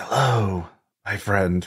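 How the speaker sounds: stage whisper, voice kept hushed. Voicing a cloaked figure in a dark tunnel dream: half-whispering. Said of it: "you just hear a whisper".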